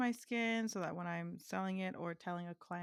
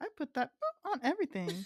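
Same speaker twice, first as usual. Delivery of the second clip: put-on, high, raised little old lady voice; 8 semitones higher, 6 dB louder than usual. Talking about Frank's Red Hot and quoting what she says: imitating an old lady. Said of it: "it's like an old lady".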